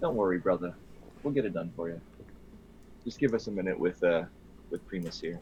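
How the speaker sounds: hushed, intimate, close whisper. Voicing a character reassuring his brother, leaning in close: whispering in his ear. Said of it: "whisper in his ear".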